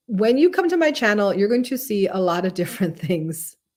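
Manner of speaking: words breaking up with laughs throughout. Center CEO introducing her channel to viewers, laughing while talking. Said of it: "I'm sorry I'm laughing".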